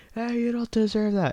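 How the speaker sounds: high-pitched jeering, heckling jab.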